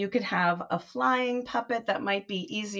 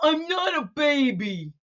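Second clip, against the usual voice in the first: put-on high little cub puppet voice, baby drawn out; 6 semitones higher, 4 dB louder than usual. A bear puppet answering the other speaker, in Bernie the bear cub puppet voice. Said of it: "Bernie might be a little bear cub".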